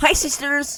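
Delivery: high, loud, belted put-on American accent. Correcting another speaker's horrible attempt, demonstrate a James Charles impression with an American accent. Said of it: "you didn't even put on an American accent".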